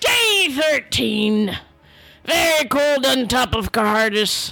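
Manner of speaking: put-on gruff, growling Scottish pirate accent. Reading out another diary entry, in a put-on scottish pirate accent. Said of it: "I, [name] son of [name], / beard now silky and conditioned. / I, [name] son of [name], / I just wanted her to sound like a Scottish pirate. / Grr! Arr".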